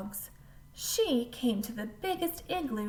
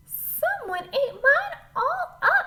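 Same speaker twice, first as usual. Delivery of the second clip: very high, loud, squeaky little voice; 8 dB louder than usual. Reading the Three Bears story aloud, Baby Bear finds her soup gone: Baby Bear's squeaky voice. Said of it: "said in her squeaky voice".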